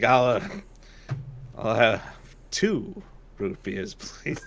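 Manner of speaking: put-on laughter breaking up the line, low and slow. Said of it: "he starts laughing as he says that line".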